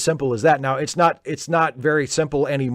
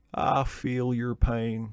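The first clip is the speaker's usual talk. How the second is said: earnest, sincere, very slow drawn-out drawl; 2 semitones lower, 7 dB quieter than usual. Explaining the tone and cadence of an impression, earnest Clinton impression. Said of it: "with Clinton, it's all about the tone and it's all about the cadence".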